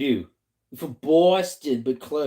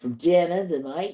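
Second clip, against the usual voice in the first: put-on Aussie accent, done for show; 4 semitones higher than usual. Told her boston accent sounds aussie, showing her australian accent. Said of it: "I'm better at Aussie".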